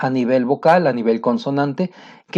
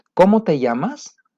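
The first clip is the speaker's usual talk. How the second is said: question-like rising tune at the end on llamas; 4 semitones higher than usual. Intonation lesson, showing how Spanish speakers ask questions: rise at the end on llamas. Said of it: "la entonación es hacia arriba. Rising".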